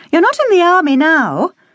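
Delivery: very high-pitched exclaiming cry. A sister answers her brother Simon after his remark: exclaiming. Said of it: "his sister exclaimed".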